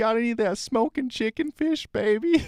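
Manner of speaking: very high put-on Southern girl voice, Southern accent. Crypto streamer jokes about a coin's name, saying it in a southern girl voice. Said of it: "like some girl from the south should be saying it".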